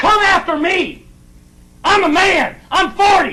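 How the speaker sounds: put-on drunk-sounding, boastful, loud shouting.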